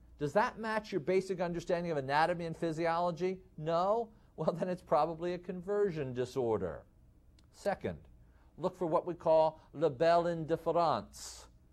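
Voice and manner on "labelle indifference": poor put-on French accent. Speaker introducing a medical term to folks, in a bad french accent. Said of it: "in my worst French accent".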